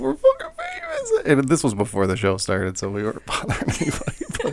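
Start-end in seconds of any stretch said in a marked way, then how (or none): 0.0-1.3 put-on very high, drunken, tipsy shriek. Recalling being tipsy before a show with a friend, the speaker retells screaming. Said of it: "so we're just screaming".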